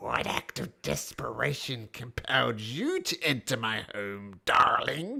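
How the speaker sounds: loud, croaking, toad-like creature voice. Narrator voicing a toad-like creature as all eyes turn to you: low, croaking voice. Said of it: "the toad-like creature speaks to you in a low, croaking voice".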